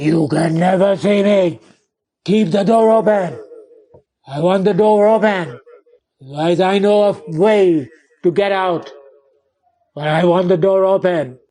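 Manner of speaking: very gruff, rough, harsh-edged voice. Telling a story, the speaker voices an unseen someone answering the painter, very gruff voice. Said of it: "replied in a very gruff voice".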